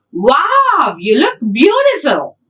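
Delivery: astonished, sing-song exclamation with first word drawn out. Speaker demonstrating how tone shows punctuation when spoken: surprised exclamation. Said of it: "So I'm using that sentence in that tone".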